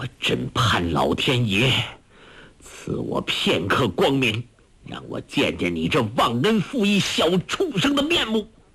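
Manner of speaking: spoken through gritted, clenched teeth. Narrator reading a master's line to his pupil, through gritted teeth. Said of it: "突然咬牙切齿说".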